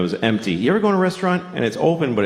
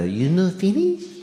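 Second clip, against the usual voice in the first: put-on Japanese accent in a higher voice; 8 semitones higher than usual. Retelling what the waitress said, imitating the waitress's accent. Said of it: "I have to do the accent".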